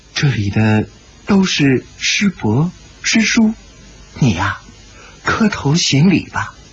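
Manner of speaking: tender, gentle, mild, coaxing voice. He turns to Shi Potian and speaks in a soft, gentle voice. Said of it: "他一转脸对石伯天柔声说道".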